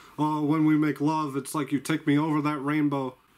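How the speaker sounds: plain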